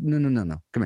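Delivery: put-on Puerto Rican accent. Retelling a store clerk calling back the speaker who was short: Puerto Rican accent. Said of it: "Puerto Rican accent said".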